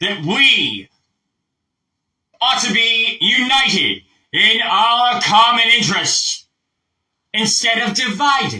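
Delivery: very high, very slow, carrying projected speech. Speaker shows the audience how it sounds: projecting to the back of the room. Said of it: "I am projecting now to the back of the room".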